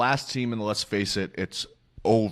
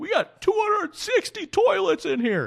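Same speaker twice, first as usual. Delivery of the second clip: very high, swooping pitch, fired-up and boastful; 4 dB louder than usual. Imitating an owner proudly announcing the arena's toilets: Steve Ballmer impression. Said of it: "That was a fantastic impression".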